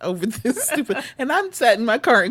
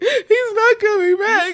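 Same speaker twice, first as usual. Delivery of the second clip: put-on tearful crying, higher and louder; 11 semitones higher, 4 dB louder than usual. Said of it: "I burst out into fucking tears".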